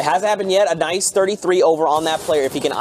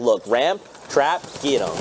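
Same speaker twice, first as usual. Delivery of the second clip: ordinary talk, nothing marked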